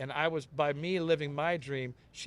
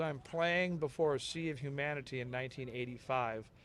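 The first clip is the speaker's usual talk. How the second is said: plain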